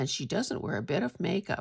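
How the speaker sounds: plain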